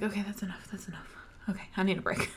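very soft, whispered okay.

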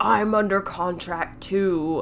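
snake-like reptilian hiss through every word. Retelling a scene where a character looks down at another: hissing reptilian voice. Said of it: "he hisses in this, like, reptilian voice".

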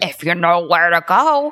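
gargled character voice. Speaker retelling a scene where Hagrid answers a question, gargled Hagrid impression. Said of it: "It was a little gargled".

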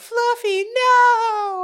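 very high, loud crying wail, not stretched. Retelling the scene where they go to buy the cat, imitating a girl crying. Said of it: "she's like crying down the hallway".

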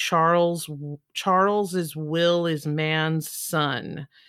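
very slow, drawn-out delivery. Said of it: "he would say it very slowly".

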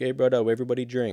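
poorly done put-on Jamaican accent. Imagining a famous actor as governor talking to people: Jason Momoa impression, Jamaican accent. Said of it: "he's not Jamaican, but that was my best".

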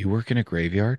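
put-on scared, uncertain child voice. Retelling how a frightened young friend asked a dad a question: imitating a scared child. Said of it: "kind of scared and wide-eyed".

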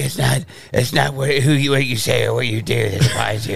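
put-on hoarse superhero voice. Mocking how the hero talks in the films, hoarse raspy Batman voice. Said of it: "don't talk like you need a throat lozenge".

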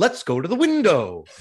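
high, loud, gosh-and-gee gee-whiz delivery. Retelling a film scene, imitating Joseph Cotten's gee-whiz delivery. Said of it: "he says it in a way that is so, like, "Gosh, gee willikers."".

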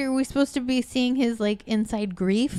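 ordinary delivery

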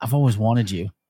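put-on girl's whisper. Retelling how a girl got into bed and spoke: imitating a girl whispering. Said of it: "this girl whispers".

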